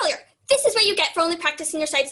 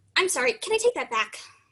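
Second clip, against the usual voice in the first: ordinary talk, nothing marked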